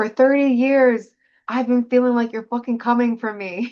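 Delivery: play-acted manic, sleepless-sounding shout. Recounting a sleepless night at two thirty, acting out yelling at the wall. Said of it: "I'm like literally yelling at the wall".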